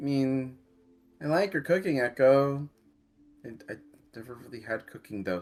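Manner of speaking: sheepish under-the-breath mumble, stumbling over words. Voicing a character who is praising another's cooking: muttering sheepishly under breath.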